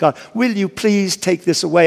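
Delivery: mock pleading, acted begging tone. Retelling how a man repeatedly asked god to take something away, acting out begging. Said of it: "I begged, I pleaded with God".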